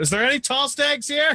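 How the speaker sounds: very high shout, calling over everyone. Voicing a character on a chair, calling out to a crowded room: shouting out. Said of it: "just shouts out".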